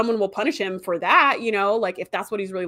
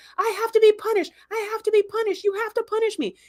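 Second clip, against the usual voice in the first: yelling, pitched very high; 12 semitones higher than usual. Retelling a character's plea to be punished: retelling a character yelling. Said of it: "he starts yelling at".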